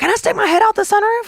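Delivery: put-on very high yelled kid voice. Retelling a son's question from the back seat of the car: imitating a child yelling. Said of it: "my son Carter from the back seat yells".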